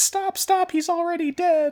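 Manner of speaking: high, piping character voice. Retelling a scene, the speaker quotes a character in Martin Prince voice. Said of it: "in Martin Prince voice".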